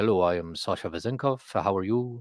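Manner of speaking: smooth, self-assured, suave, polished delivery. Retelling how a new teammate first greeted everyone: imitating Sasha Vezenkov's greeting. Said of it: "he walks in the door, and he's like".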